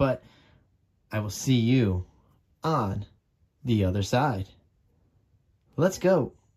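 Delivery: speaking low and tired. Late at night, a tired speaker signing off to viewers, talking a little low. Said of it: "I'm talking a little low".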